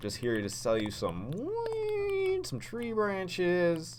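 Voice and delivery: high slow sing-song.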